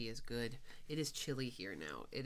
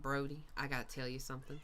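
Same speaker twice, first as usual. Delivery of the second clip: put-on heavy Southern accent, laid on thick. Imitating a friend calling on the phone, in Elisa's thick Southern accent. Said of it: "And it's not like super thick like that".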